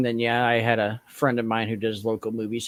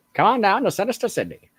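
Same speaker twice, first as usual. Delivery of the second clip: exaggerated put-on 1920s style talk, higher; 10 semitones higher than usual. Imitating an actress from the movie: over-the-top twenties style speak. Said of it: "that twenties style speak".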